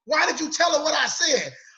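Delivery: angry delivery.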